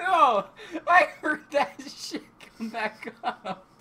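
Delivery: high, slow, loud laughing cry of disgust.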